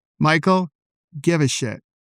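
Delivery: blunt, no-nonsense, spicy, stern delivery. Giving a tip the way dad would say it: imitating dad saying it very spicily. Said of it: "I'll say it in a way that my dad would say it to me".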